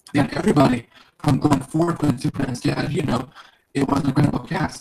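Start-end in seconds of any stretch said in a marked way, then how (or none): none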